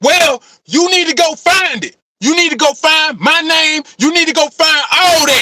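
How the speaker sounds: put-on passive-aggressive voice. Retelling how someone demanded he go find the names: imitating a loud passive-aggressive demand. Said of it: "so he got real loud".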